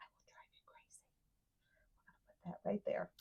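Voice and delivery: soft, hushed, under-the-breath whisper. Putting a piece of ephemera down: whispering. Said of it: "I don't know why I start whispering".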